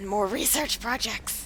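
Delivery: put-on creature-like gremlin voice. Streamer planning next steps in a game, in a gremlin voice. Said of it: "that was a gremlin voice".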